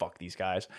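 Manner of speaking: low, angry, half-whispered grumble under the breath. Retelling what an angry fan half-whispered to himself: imitating someone half-whispering. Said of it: "whispering to himself".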